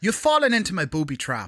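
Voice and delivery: put-on Irish accent. Reading a test line for an accent check at a mock talent agency, irish accent.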